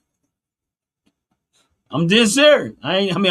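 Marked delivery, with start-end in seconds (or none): 1.9-2.7 loud, laughing through the words. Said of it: "I'm laughing 'cause it sounds funny".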